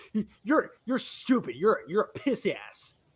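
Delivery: put-on bratty child voice. Mocking how a game character starts acting: snotty kid online. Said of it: "like a really snotty kid online".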